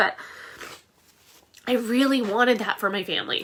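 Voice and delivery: choked-up, emotional voice. Describing wanting to be that family for the kids: getting emotional. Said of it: "I didn't realize I'd be so emotional".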